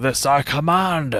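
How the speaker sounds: forceful commanding shout. Speaker imitating a character's line, imitating a guy shouting a command. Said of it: "it's just a guy shouting. He emphasizes the command a little bit more".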